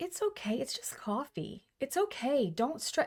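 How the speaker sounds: calm, gentle, soft, slow, soothing, reassuring voice. Retelling what a girl said when the speaker's car died; imitating a calm soothing voice. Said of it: "She shared her calm".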